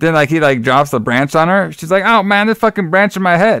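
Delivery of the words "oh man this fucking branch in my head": high, whiny, griping, put-upon complaining. Retelling a film scene, the granny hit by a branch: imitating someone complaining. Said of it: "complaining about it".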